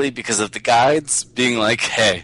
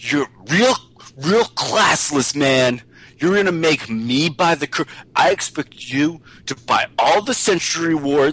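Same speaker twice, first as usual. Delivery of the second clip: put-on panicked, freaking-out outburst, higher; 4 semitones higher than usual. Retelling what a game teammate said: imitating a teammate freaking out. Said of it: "this guy starts freaking out".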